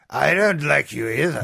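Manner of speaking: rough-edged, gruff movie heavy thug voice. Playing a quote game with co-hosts, doing a Star Wars movie voice. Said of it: "I love doing that voice".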